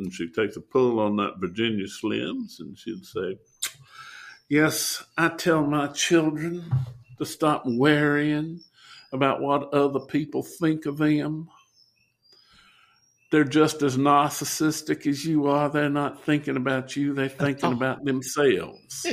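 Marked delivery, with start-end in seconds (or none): 4.5-19.0 mock Southern woman's voice. Quoting a sister's advice to her children, imitating a southern lady. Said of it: "my sister's a wonderful Southern lady".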